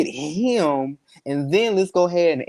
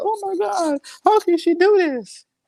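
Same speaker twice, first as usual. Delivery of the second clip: fake sobbing, boo-hooing, higher pitch. Acting out a betrayed husband's hypothetical reaction: mock crying, boo-hooing. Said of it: "I'm over here crying and boo-hooing and hurt".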